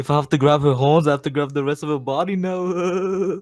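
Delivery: put-on silly British accent. Quoting a dubbed anime character's line: dumb British accent. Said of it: "he has, like, this British dumbass accent".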